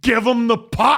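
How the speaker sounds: loud, high shouting. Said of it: "Rob Ray is shouting".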